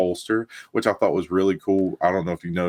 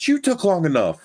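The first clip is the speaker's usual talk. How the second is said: mock very high, shrill shout; 11 semitones higher than usual. Recounting watching the show with her, retelling yelling at the TV. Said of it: "And I'm yelling at the T V".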